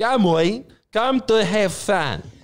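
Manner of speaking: high, earnest, very serious, slow, drawn-out delivery. Retelling a video intro, imitating a serious Rocco Siffredi. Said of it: "he looked very serious, being like".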